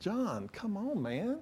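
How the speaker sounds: quiet exasperated mutter.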